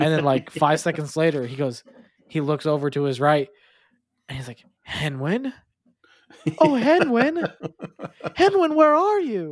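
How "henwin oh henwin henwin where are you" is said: very high, swooping put-on character voice. Retelling a scene where he calls for a missing pig, character voice. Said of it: "You do his voice pretty good there".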